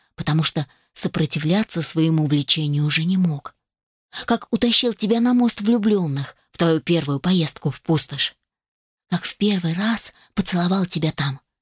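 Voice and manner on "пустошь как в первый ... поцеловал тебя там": ordinary delivery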